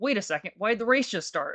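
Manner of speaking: high-pitched, panicking, caught off guard. Retelling a race that started unexpectedly: retelling own panic. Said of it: "kind of panicking".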